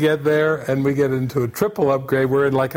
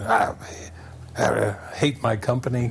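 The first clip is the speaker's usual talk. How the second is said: mimicked muttering under the breath, quieter; 4 semitones lower, 5 dB quieter than usual. Retelling how an angry rental car salesperson muttered under his breath, imitating someone muttering. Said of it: "he's muttering under his breath".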